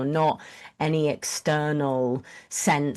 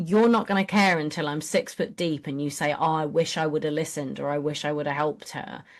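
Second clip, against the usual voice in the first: ordinary talk, nothing marked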